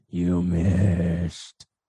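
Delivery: very low, grumbling growl, "missed" drawn out. Reading a story, an unseen voice calls from the mist, in a low grumbling growl. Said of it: "This low, grumbling, growled voice coming from the mist".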